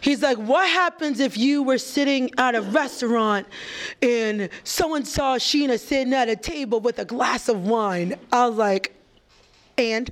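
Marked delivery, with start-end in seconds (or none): 0.4-8.2 put-on New York Brooklyn accent. Retelling what he said while stuck in traffic on the Brooklyn Expressway, in a put-on Brooklyn accent. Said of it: "in his Brooklyn accent".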